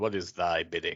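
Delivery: very loud, booming delivery. Quoting Darth Vader's line while mocking how he talks: imitating Darth Vader. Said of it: "the only time he ever talks like that".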